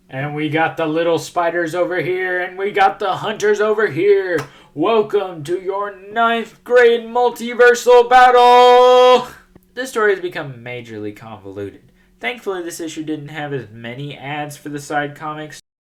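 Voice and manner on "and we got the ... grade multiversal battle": very loud, booming rink announcer call, pitched up. Summing up a comic's final battle, children's hockey game announcer voice. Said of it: "like a freaking announcer at a at a freaking children's hockey game".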